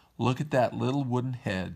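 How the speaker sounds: ordinary delivery, nothing marked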